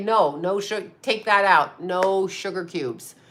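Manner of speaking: ordinary delivery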